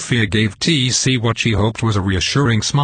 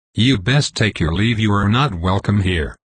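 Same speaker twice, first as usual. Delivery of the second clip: sharp, cutting edge to the voice. Narrator reads the time conductor telling an intruder to leave, with a sharp edge. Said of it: "In Chapter 3 titled The Intruder, from my Science-Fiction story Time Tracks, [name] Miller doubts whether she is really the right person to help repair her timeline, while the kind Time Conductor [nam".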